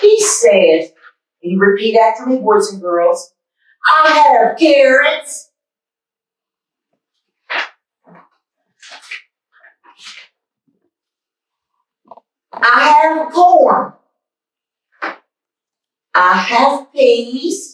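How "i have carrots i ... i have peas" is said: loud, proud put-on Southern boy voice, higher. Reading a children's book aloud as a character: loud proud Southern boy voice. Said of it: "I'm gonna read like him the way his voice is".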